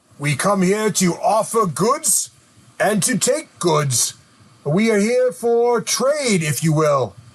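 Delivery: gruff, coarse, rough hobgoblin monster voice. Voicing a hobgoblin who answers a traveler's greeting: rough hobgoblin voice. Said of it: "he speaks in, uh, a rough common".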